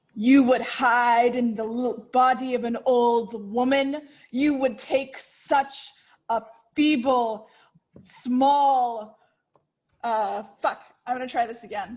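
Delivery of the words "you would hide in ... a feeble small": scornful, mocking character voice. Voicing a character casting a mocking spell at a creature: in-character mocking taunt. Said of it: "let's find the voice".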